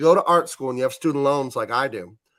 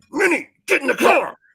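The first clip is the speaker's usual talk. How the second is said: very high yell through clenched teeth; 13 semitones higher, 5 dB louder than usual. Describing how a mad dad yells, the speaker imitates a dad yelling through teeth. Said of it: "he'll yell at you without opening his teeth".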